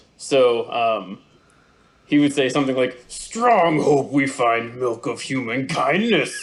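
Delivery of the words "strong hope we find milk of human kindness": angry, grunting brute mutant voice, broken speech. Doing character voices, voicing a character who is an angry super mutant. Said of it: "he's just an angry super mutant".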